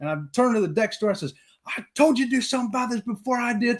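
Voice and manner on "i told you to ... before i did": put-on, high, livid, furious outburst. Retelling turning on the deck store woman, retelling a furious rant. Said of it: "I was furious".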